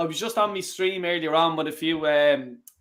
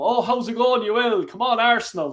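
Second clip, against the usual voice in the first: over-the-top, pitched-up, exaggerated Irish man's accent; 6 semitones higher, 3 dB louder than usual. Showing how a typical Irish man talks: exaggerated typical Irish accent. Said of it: "Typical Irish man".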